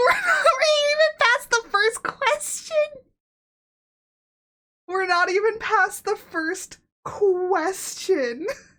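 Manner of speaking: very high voice, crying and half-laughing through words. Streamer, not even past the first question, already crying while talking. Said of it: "I'm already crying".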